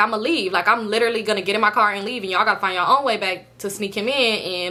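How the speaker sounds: ordinary talk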